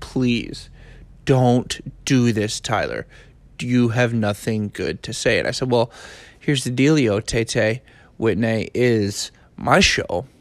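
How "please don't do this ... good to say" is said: put-on pleading, begging tone. Speaker acts out a man begging him not to start a podcast: retelling pleading. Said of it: "He pleaded with me".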